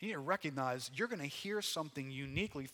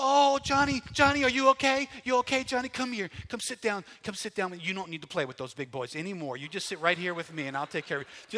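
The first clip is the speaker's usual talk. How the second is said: mock panic, higher, louder, faster; 6 semitones higher, 11 dB louder than usual. Describing the playground parent he is not, imitating a panicked parent. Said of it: "running over in a panic".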